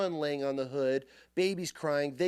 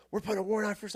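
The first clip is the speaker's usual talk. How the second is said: bossy, raised, high-pitched yelling; 6 semitones higher than usual. Retelling a confrontation, acting out what the guy was yelling. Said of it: "This guy's yelling".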